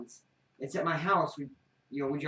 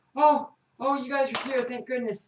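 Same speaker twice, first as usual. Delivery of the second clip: tearful, high-pitched woman's voice; 9 semitones higher, 4 dB louder than usual. Narrating a scene, voicing a woman who runs in holding an infant: tearful woman. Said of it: "she's very tearful and all that".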